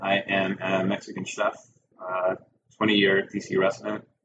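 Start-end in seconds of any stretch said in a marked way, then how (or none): none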